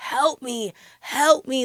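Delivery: mock frantic, urgent, high-pitched pleading cry. Retelling being unable to stop: imitating past screams for help. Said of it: "I'm screaming for help".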